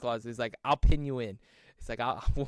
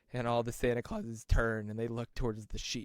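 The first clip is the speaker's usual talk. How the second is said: normal talking voice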